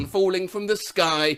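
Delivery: ordinary delivery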